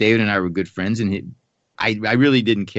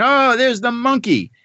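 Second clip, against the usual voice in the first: mock very high, shrill, high-pitched scream; 14 semitones higher, 4 dB louder than usual. Retelling being greeted at a ski cafe table: imitating someone screaming. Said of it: "he starts screaming".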